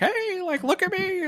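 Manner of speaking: very high, slow, drawn-out, over-the-top hammy call. Retelling a movie scene where Knock runs down the street: over-the-top Knock voice. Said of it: "he's, like, so over the top".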